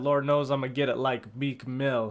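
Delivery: plain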